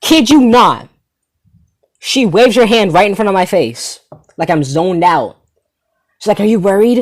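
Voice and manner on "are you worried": mock delivery, blaring, as loud as possible. Retelling how the girl who poked the speaker asked: imitating someone asking loudly. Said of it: "she says it in the loudest way possible".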